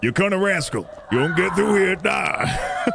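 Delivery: put-on New Yorker voice, New York accent. Redoing a voice line at Connor Rascal, this time in a loud New Yorker voice. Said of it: "That's New Yorker, but louder".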